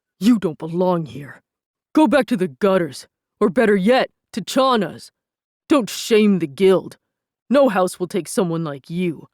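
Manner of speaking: loud growling voice from start to end. Reading a story, a character steps up beside Chiron and growls at a rival. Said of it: "[name] growled and stepped up beside [name]".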